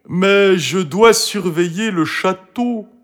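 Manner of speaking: troubled, put-out tone. Asked to come help dig up a bone, Toutou replies, bothered. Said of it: "dit Toutou l'air embêté".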